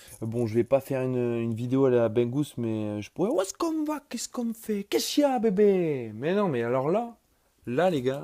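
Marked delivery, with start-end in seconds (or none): 3.3-8.3 terrible Marseille accent, pitched very high. Introducing the Marseille OM topic in a video, very bad Marseille accent. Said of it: "accent à Marseille très mauvais d'ailleurs".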